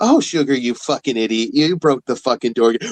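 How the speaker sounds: affectionate, honeyed, sugary-sweet tone. Recalling talking shit to her for what she broke: mock-sweet insults. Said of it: "talking shit to her for the shit she broke sweetly".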